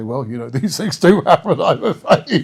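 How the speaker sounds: loud, chuckling mid-sentence, unable to keep straight. Imitating a politician answering condolences: imitating Nigel Farage laughing mid-sentence. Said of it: "can't get to the end of a sentence without laughing".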